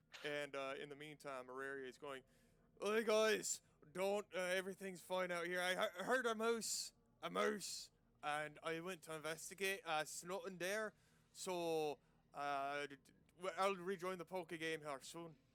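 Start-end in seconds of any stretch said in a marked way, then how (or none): 2.8-15.3 loud, jumbled, shifting mix of put-on dialects, stumbling. Voicing a character covering for a body behind the door: mixture of dialects. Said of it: "a mixture of dialects".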